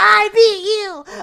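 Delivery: put-on high-pitched screaming. Retelling how Icy screamed after winning the fight: Icy screaming high-pitched. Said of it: "screaming on top of his lungs".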